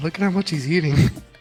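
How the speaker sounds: put-on whisper. Imagining a grandma's remark about a guest's eating: imitating grandma whispering. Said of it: "She'd probably be whispering".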